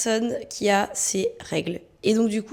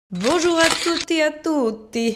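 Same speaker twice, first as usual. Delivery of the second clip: put-on Italian accent, higher pitch; 6 semitones higher than usual. Greeting the audience, in a put-on Italian accent. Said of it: "Je prends cet accent italien".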